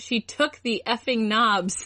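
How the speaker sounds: ordinary delivery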